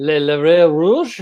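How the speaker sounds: clumsy put-on French accent. Reading a French film title aloud: embarrassing French accent. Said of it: "an embarrassingly, uh, uh, pass at, uh, a French accent".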